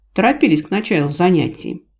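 ordinary delivery

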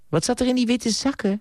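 gently spoken, very high pitch. Reading a story aloud, a woman asks a question, softly. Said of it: "Vroeg ze zachtjes".

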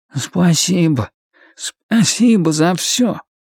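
very shy, hesitant, timid, high and slow. The trash can thanks Lloyd as they say goodbye: very timid. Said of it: "а потом добавил совсем робко".

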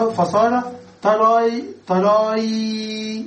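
"tarayn" sounded out slowly, stretched, built up.

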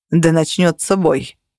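ordinary delivery

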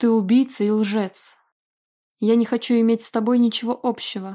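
ordinary delivery

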